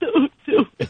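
fake, mock crying. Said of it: "not the most authentic crying I've ever heard".

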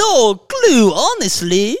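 loud, swooping, big and bouncy cartoon villain accent. Speaking to viewers, the speaker talks in a Gru accent. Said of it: "Tell them where that accent's from".

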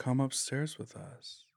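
whispered, level, flat monotone. Retelling how pale figures came downstairs toward the speaker; imitating monotone speech. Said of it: "they were speaking really monotone".

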